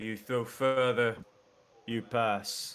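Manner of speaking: big giant character voice. Narrating a game, speak as the Cyclops addressing the players: cyclops giant voice. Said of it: "the Cyclops walks over then, and he goes".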